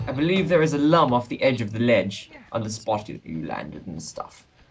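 English accent, slipped into. Telling another player where a lum is, in a British accent. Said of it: "Why am I talking with a British accent?".

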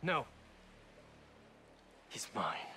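very quiet, hushed, dangerous seething anger. A game character answers a companion's offer to go after someone together: really angry. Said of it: "you can hear in Peter's voice that he's like really angry".

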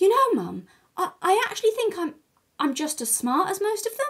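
amazed tone. Recalling phoning her mum three weeks in, retelling in an amazed tone. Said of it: "in this amazed tone of voice".

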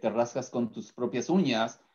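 ordinary talk

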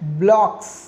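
loud, with the ck in "blocks" stretched out.

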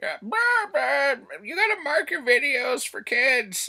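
drawn-out, very high, loud squawking parrot voice. A BookTuber quoting a notice they keep getting, in a parrot voice. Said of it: "I just did a parrot voice".

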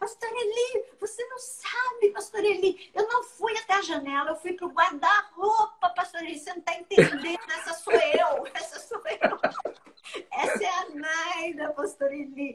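mock excited yelling, high pitched. The speaker retells phoning the pastor, retelling her shouting. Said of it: "Eu gritando".

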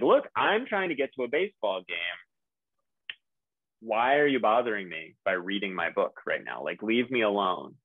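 acted-out annoyance, annoyed man voice. Acting out a man bothered by someone while trying to leave, mock-annoyed. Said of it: "he's really annoyed by that person".

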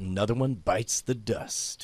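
very low, under-the-breath muttered aside. Playing someone driving away from a town he set on fire: muttering under breath. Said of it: "I mutter under my breath".

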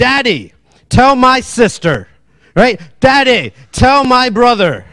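put-on high, swooping, whining child voice. Showing how kids ask a parent to intervene: imitating a whiny child. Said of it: "you've heard your kids do this tone".

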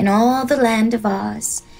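plain reading voice

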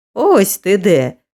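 triumphant, exclaiming voice. Narrator reading a story, a man calls out on finding someone; triumphant. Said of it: "пролунав тріумфуючий голос Ренді".

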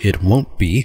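put-on, announcing story narrator voice. Reading a card's text aloud, the speaker breaks in with a narrator voice. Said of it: "narrator voice".

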